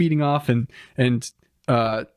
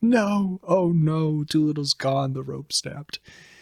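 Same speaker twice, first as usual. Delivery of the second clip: exaggerated fake crying, very slow and drawn out. Retelling characters mourning a lost companion: mock crying. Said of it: "They're all crying".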